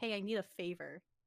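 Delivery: ordinary talk, nothing marked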